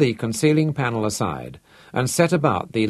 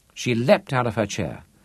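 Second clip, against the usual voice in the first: ordinary delivery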